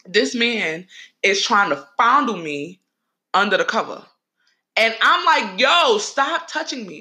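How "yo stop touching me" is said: high-pitched yelling. Retelling pushing away a man under the cover: retelling a yell. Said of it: "I'm yelling".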